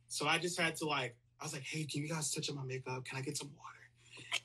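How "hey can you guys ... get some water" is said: hushed, quiet whispered speech. Retelling how she asked for makeup and water backstage: imitating her own whisper. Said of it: "but I had to whisper".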